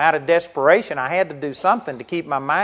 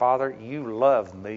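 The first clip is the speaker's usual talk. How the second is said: acted speech through gritted teeth, quieter, slower; 4 semitones lower, 6 dB quieter than usual. Recalling praying during very bad times, retelling a gritted-teeth prayer. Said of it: "but through gritted teeth".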